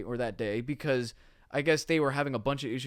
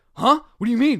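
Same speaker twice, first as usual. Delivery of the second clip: put-on thick, heavy German accent, high, shrill, very loud; 11 semitones higher, 13 dB louder than usual. Retelling his dad's reply on the phone after the crash, in a heavy German accent. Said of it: "he's got this heavy German accent".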